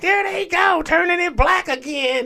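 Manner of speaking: very high-pitched, sarcastic, put-on voice.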